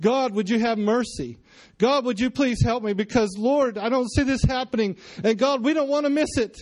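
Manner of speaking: fake desperate crying out. Speaker acting out a man praying and crying out to god: mock desperate crying out. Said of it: "That's called desperation".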